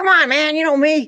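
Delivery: squeaky, very high voice. Retell Mickey's answer when you said you didn't know if he was serious, imitating Mickey's squeaky voice. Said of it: "he got that squeaky voice".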